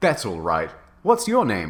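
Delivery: ordinary delivery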